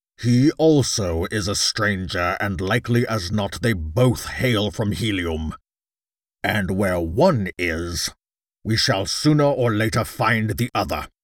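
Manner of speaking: imperious, commanding, authoritative tone. A jeddak gives orders to his men about two strangers, commanding. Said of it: "Yes, O Jeddak, / Cried [name]. / Quadruple the air patrol, and let every man who leaves the city by air or ground be subjected to the closest scrutiny".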